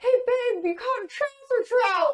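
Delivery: high, slow teasing tone. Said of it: "And I was like".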